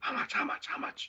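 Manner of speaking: breathy, hushed, quiet whisper. Retelling how a buyer at a show whispered to the painter: imitating someone whispering. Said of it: "So he starts whispering to me".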